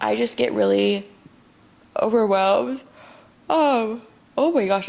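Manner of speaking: yawning while talking. Speaker talking to a listener, yawning while talking. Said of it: "I keep yawning".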